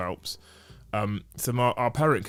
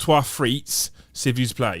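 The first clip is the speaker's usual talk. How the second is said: plodding French spoken with imitated English accent; 3 semitones higher, 5 dB louder than usual. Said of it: "So like an Englishman".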